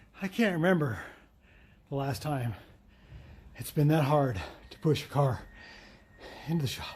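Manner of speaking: out of breath. After pushing a car into the shop, the speaker talks, out of breath. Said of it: "I'm totally out of breath".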